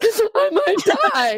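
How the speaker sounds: mock tearful, crying voice. Retelling own answer about why not drinking: imitating own past crying. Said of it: "of course, I'm, like, crying".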